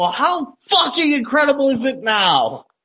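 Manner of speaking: put-on high yell. After pausing it, the speaker stands up and yells, retelling their own yell. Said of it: "I'm fucking standing up there and I'm yelling".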